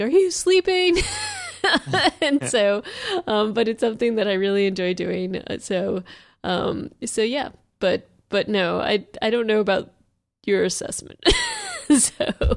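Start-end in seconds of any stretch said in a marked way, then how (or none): 0.0-1.0 high, loud yell. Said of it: "he'll always, like, yell at me".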